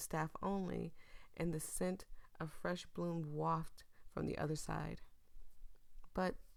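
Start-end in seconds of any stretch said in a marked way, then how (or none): none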